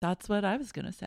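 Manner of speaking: rushed, soft, quick little mumble. Retelling what a girl said right after another girl screamed: soft mumble. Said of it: "she softly mumbled".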